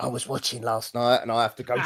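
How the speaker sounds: secretive, hushed whisper under the breath. Retelling what he whispers every Monday: imitating someone whispering. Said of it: "whisper to me, going".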